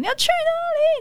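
very high-pitched, shrill hollering shout. Retelling how mom called out at the door: imitating a shout. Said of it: "我妈大喊说".

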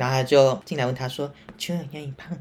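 put-on soft-spoken voice. Retelling a female customer's question to a friend at a drugstore, imitating a very quiet voice. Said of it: "他就很讲这么小声".

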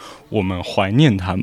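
deep, sonorous tone, jaw dropped wide open. You quote to a friend what a man said, imitating a very low voice, mouth wide open. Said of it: "用一种很低沉的口气，然后口腔张得很开".

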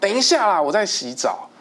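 very high yell. Retelling a man in the shower shouting at someone knocking, retelling a louder shout. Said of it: "他就喊跟大声".

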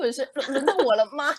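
acted-out shaky, stammering, high, slow trembling little voice. Retelling how classmates asked the person beside them, imitating a trembling voice. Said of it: "用那个就颤抖的声音跟隔壁同学说".

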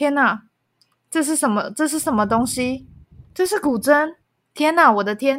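ordinary talk

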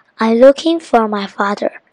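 plain reading voice

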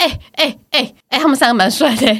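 mock nudging tone, pointed, called out lightly. Retelling a remark to a sister about three doctors: imitating herself saying it loudly. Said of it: "所以我就讲得非常大声说".

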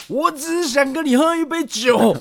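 put-on booming, drawn-out, very high, slow drunken voice. Retelling a fight where one person repeated a line: imitating a loud drunk plea. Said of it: "他就很大声说".

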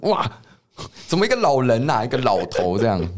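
shocked, high-pitched exclamation. Describing people waking from old-age makeup and seeing the mirror: acting out shock at the mirror. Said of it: "一起来看到镜子就".

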